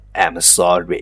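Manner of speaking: loud, pure American accent. Apologizing to everyone in English: pure American accent. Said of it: "纯正的美式发音".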